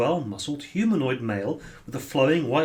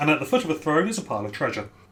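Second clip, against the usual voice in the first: ordinary talk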